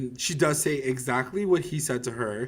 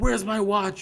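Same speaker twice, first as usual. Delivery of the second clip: put-on yelling, higher; 8 semitones higher, 4 dB louder than usual. Retelling a TV scene where Hal yells at Chick: imitating Hal yelling. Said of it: "He's yelling".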